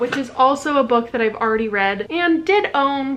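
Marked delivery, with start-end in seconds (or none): none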